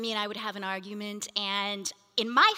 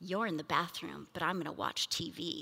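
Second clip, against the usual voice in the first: hushed, soft-spoken, very quiet little pastoral voice; 5 semitones lower, 9 dB quieter than usual. Retelling how he came over after you slammed the bathroom door, in his quiet little pastoral voice. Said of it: "in his quiet little pastoral voice".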